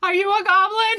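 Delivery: very high, shrill, top-of-the-lungs scream. A character in a tabletop game screams at the bushes, screaming. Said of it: "He screams at the bushes".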